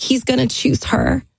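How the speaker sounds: high-pitched, crying through the words. Retelling a phone call, quoting own past words: retelling sobbing speech. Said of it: "and I'm just sobbing".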